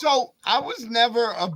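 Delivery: voice cracking and breaking mid-phrase. Talking about a wrestling move when the voice cracks mid-sentence: voice cracking. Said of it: "My voice just cracked".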